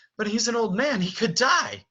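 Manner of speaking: very high-pitched, begging, bewildered, confused pleading. Showing actors how the character steps forward with the line: pleading and confused. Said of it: "pleading and, and just so confused".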